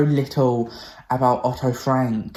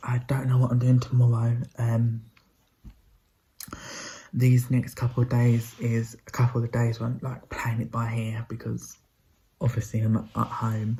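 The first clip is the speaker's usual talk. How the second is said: speaking softly in a hushed voice; 4 dB quieter than usual. Vlogging at home while mum sleeps above, talking quietly. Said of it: "I'm talking quietly because my mum's currently asleep".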